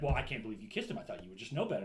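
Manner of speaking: mad, angry, blaming, accusing tone. Retelling what the guy said to the girl afterwards: imitating an angry man. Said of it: "And then he gets mad".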